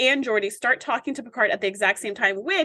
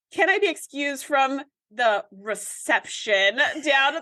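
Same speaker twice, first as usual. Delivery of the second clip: normal talking voice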